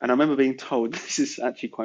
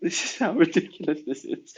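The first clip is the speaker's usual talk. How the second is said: talking through laughter, higher; 5 semitones higher than usual. Answering a question about a past troubling episode, laughing while talking. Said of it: "I'm so sorry for laughing".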